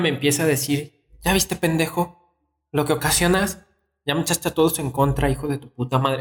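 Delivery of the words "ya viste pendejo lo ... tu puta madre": furious, angry woman's voice. Retelling what a woman told the speaker during an argument: imitating an angry woman. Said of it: "Así enojada la señora".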